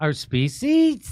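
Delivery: put-on high rising upspeak. Repeating a woman's line to mock her upspeak, after asking to hear it again. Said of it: "I want to hear her up talk... I can't even get up that high".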